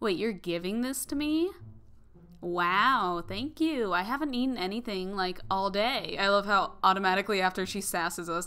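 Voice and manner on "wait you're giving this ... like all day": put-on snobby, snooty girl voice with drawn-out wow. A gamer voices a character in the game with a snobby girl voice. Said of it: "I give her like the snobby girl voice".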